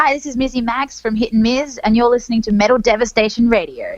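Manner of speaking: fake American accent. Recording a station ID for a radio show, in a put-on American accent. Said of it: "I put on American accent when I when I do that".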